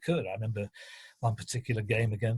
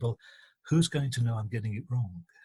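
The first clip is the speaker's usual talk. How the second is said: put-on whisper. Retelling a radio reporter's answer to a question: imitating Peter Jones whispering. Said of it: "and he whispered to me".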